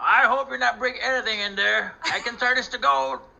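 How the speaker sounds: shouting. Calling out in character after hearing a commotion: shouting. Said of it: "I'm gonna shout".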